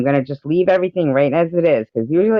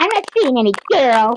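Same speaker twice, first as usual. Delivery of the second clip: very high-pitched voice; 10 semitones higher than usual. Showing Secular how well you do his voice, imitating Secular's voice. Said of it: "tell me that I don't do your voice good".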